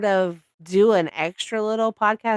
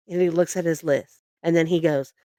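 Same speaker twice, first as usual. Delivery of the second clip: plain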